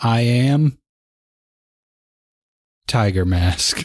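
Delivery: very slow, stilted, halting delivery with mid-line pause. Mocking how the main actor delivers every line, the speaker quotes him with a pause mid-line. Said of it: "there's a pause in the middle of everything that he says".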